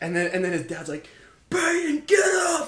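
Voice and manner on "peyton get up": play-acted very high yelled shout. Retelling a dad shouting at his son from the stands: imitating a dad yelling. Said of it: "Yelling at him".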